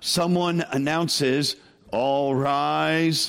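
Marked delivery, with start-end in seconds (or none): 1.9-3.3 put-on, ominous-sounding announcer voice. Imitating a courtroom announcer as the judge enters, ominous-sounding announcer voice. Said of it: "in that really ominous sounding voice".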